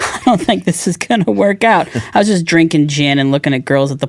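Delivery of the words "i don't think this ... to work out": put-on tearful voice, higher. Retelling own words in a car at a dealership, imitating own past crying. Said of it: "crying in a car".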